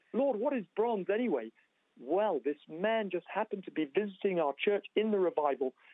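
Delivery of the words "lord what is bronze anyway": put-on loud, pitched-up yell at full voice. Speaker retells yelling out to the Lord during a church revival, retelling a loud yell. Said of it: "I yelled out loudly".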